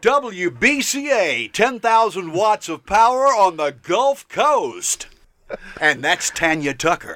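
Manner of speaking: classic on-air station DJ radio announcer voice. Asked by the co-host to give the podcast sign-off, in his radio voice. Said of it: "let [name] put on his radio voice".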